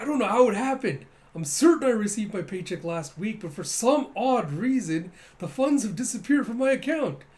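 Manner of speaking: mock-serious, high, loud, earnest pleading voice.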